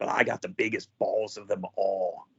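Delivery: low, soft, quiet drawl. Retelling what a wrestler said to the camera, low Jake Roberts drawl. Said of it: "the low Jake Roberts drawl the entire time".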